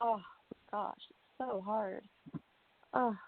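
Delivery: soft, choked-up voice, words catching. After thanking Petal Rose, the speaker can barely go on, choked up. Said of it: "we got choked up".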